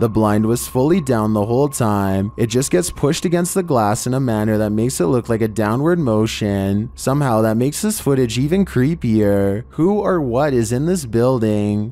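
ordinary talk

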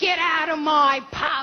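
Cockney accent, said slowly.

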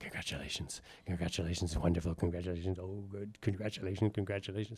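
low stage whisper, repeated over and over. Retelling being guided backstage through the dark: imitating people whispering. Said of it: "you're whispering".

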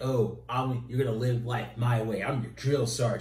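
mock, super condescending, patronizing, talking-down tone. Recapping a comic scene of Wolverine talking down to another character, mock-condescending Wolverine. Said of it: "he's being super condescending".

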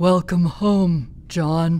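very slow. [name] redoing the line to John after being told to go slower, very slow. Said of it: "Definitely slower".

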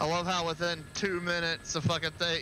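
ordinary delivery

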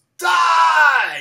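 high, loud yelled cry.

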